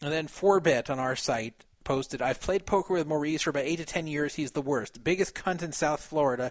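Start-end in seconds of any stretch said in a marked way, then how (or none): none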